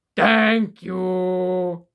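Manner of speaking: big, deep, loud, booming monster voice. The growing giant reaches toward those cheering him and speaks his first words: deep booming voice. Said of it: "in a deep, booming voice".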